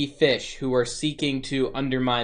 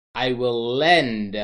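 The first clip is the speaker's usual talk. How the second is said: lend stretched slowly and stressed. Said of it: "and I emphasize that word".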